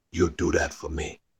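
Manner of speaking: hushed, soft, whispery delivery. Retelling what a man said to him while nodding: imitating a whispery voice. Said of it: "in that whispery voice".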